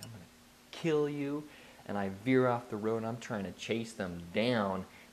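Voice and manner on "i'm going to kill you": put-on enraged, furious, high-pitched voice. Retelling the moment a driver yelled at the speaker: retelling an enraged threat. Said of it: "I just lose my mind and I'm like".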